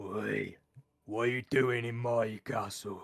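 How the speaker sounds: deep, slow, lumbering snow ogre voice. Narrator voices a snow ogre walking through the gates: snow ogre voice. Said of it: "Sort of a snow ogre".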